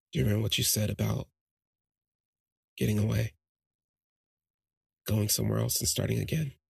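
confiding, secretive, conspiratorial tone. Retelling what someone said in her ear: imitating a lowered conspiratorial tone. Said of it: "he lowered his tone conspiratorially".

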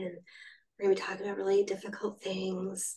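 slightly breathy, quick, sexy voice. Demonstrating the voice just described: breathy, sexy NPR mommy voice. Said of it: "that kind of mommy voice, but also a little breathy and sexy".

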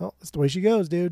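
loose, nonchalant, douchey shrug-off. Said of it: "it sounds very, like, nonchalant and kind of douchey when I say it".

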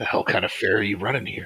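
muttered under the breath. In a game scene near a guard, a player speaks in character: muttered under the breath. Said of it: "I just under my breath".

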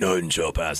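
deep growled vocals. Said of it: "the exact same fucking Cannibal Corpse, like, fucking vocals".

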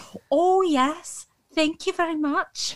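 high, put-on Scottish accent. Told they must speak in a Scottish accent all day, answering in a Scottish accent. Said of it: "I have to speak in a Scottish accent".

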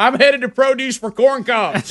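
very high-pitched, shrill mock scream. Retelling the moment, the speaker acts out their own scream. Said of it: "And I screamed".

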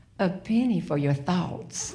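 seductive, put-on sexy voice. Retelling arm in arm on the lanai: retelling in her sexiest voice. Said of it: "and then my sexiest voice".

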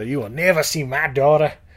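poorly done fake Southern accent. Retelling a mother's line from a movie in a bad Southern accent. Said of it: "a lot of bad Southern accents in here".

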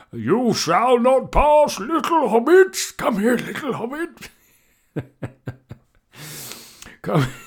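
put-on old wizard voice pitched very high. Showing what the cricket gods sound like, in an Ian McKellen voice. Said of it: "They sound a bit like Ian McKellen".

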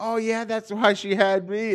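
put-on squeaky, very high, loud little-kid voice. Retelling what a little kid said back to him, the speaker is imitating a little kid. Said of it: "He's this little kid".

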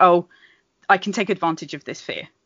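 ordinary delivery

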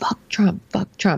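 put-on child screaming voice. Retelling a sixth grader confronting a girl, imitating a kid screaming. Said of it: "he starts screaming".

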